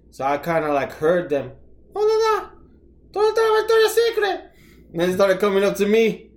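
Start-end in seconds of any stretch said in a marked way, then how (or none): 2.0-4.4 put-on very high-pitched Spanish with Puerto Rican accent. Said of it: "did your Puerto Rican accent come out".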